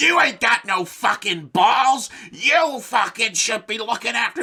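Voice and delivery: loud, high screaming tirade. Retelling how a bar host yells at the staff: imitating someone screaming. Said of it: "he'll just fucking scream at them".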